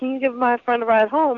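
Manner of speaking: ordinary delivery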